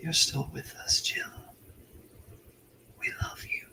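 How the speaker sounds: faint, hushed, very soft little whisper. Voicing a whisper that a player hears from within: little whisper. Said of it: "just a little whisper".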